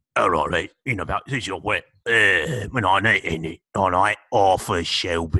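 indistinct mumbling, hard to follow. Mocking an actor's hard-to-understand lines, doing a mumbling Peaky Blinders impression. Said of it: "he just mumbles and then says Arthur Shelby".

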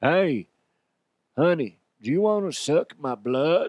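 put-on cowboy voice. Doing a reenactment, playing the cowboy talking to a woman: cowboy voice. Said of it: "I'll be cowboy and be like".

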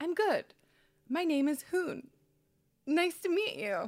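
high, lilting, friendly voice.

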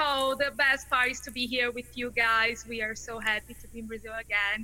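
ordinary delivery

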